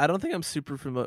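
breaking voice cracking mid-line. Podcast co-host replying in conversation: voice cracking. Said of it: "My voice just cracked quite profoundly".

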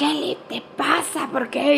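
mock hushed, breathy whispered scolding. Retelling how mom scolded on finding painted walls: imitating mom scolding. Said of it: "le empieza a reclamar".

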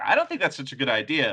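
normal talking voice

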